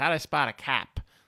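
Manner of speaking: put-on Boston accent in a tough thug voice. Discussing a movie scene, quoting a thug outside the bar; Boston accent. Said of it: "I'll stop with the Boston accent".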